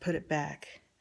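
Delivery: play-acted harsh, curt, unfriendly tone. Retelling telling Poppy to put the shirt back: imitating a not nice voice. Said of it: "in a not nice voice".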